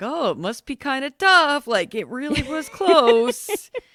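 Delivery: goofy male voice, high-pitched and slow. Describing Jesse talking on the show, imitating Jesse's goofy guy voice. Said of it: "putting on like the goofy guy voice".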